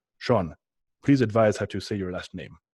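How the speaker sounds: put-on Russian-accented voice. Reading Pavel's email aloud about saying a last name: Pavel's Russian accent. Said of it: "I'm reading it in his Russian accent".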